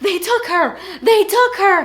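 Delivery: very loud, shrill, frantic freaking out. Retelling a friend running up to tell what happened: imitating someone freaking out. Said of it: "freaking out".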